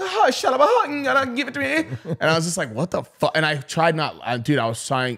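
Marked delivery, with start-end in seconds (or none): 0.0-2.0 very high, strained, weird, drawn-out voice. Retelling a man whose voice got really high, doing his high weird voice. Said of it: "His voice got really high".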